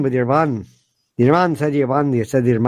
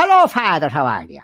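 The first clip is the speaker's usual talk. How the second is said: exaggerated, poorly done stage Irish accent. Mocking how Americans do the accent: exaggerated American-style Irish accent. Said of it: "The way Americans do it is always like".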